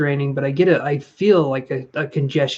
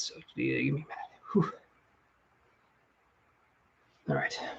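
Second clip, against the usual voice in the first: out of breath, hushed, almost whispered, rushed; 15 dB quieter than usual. Pausing before a session to catch their breath: out of breath. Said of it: "let me catch my breath".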